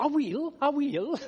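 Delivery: put-on thick Glasgow accent, very high and very slow. The speaker quotes a man's reply, in a broad Glaswegian accent. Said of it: "with his broad Glaswegian accent".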